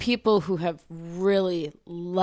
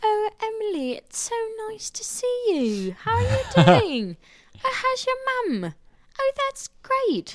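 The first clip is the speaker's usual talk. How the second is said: put-on very high, sweet little-old-lady British voice. Imitating a woman greeting someone, little old british lady voice. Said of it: "little old lady British voice".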